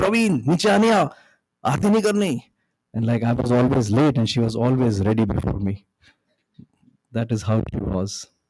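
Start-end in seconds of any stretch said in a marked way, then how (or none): 0.0-2.4 very loud, high-pitched yell at top of voice. Retelling how his mother called him down each morning: imitating his mother yelling. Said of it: "yell at the top of her voice".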